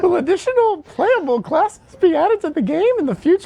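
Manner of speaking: squeaked out very high. Asked for a Mickey Mouse impersonation, the speaker reads a question in a Mickey Mouse voice. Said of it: "It's the best I can do".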